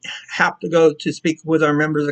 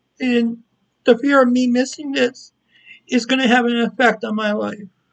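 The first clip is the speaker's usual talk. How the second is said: tearful, close to crying, pitched-up voice; 7 semitones higher than usual. Explaining being upset about possibly missing a yearly event: teary. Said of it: "I know I'm feeling teary up now".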